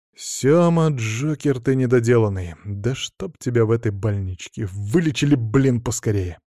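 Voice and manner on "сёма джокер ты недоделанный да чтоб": usual speaking voice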